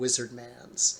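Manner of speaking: ordinary talk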